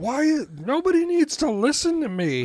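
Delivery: put-on very high, shrill, loud four-year-old's scream. Retelling how their four-year-old broke the tension, imitating a child screaming. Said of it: "my four-year-old just started screaming".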